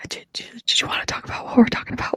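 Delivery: hushed, hush-hush whispered voice. Teasing the other speaker for suddenly going quiet, imitating a quiet whisper. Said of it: "you just got like so quiet about it".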